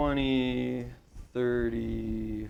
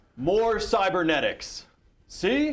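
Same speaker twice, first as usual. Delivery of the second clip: high, slow, booming voice. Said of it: "You sound like Tony the, Tony the Tiger".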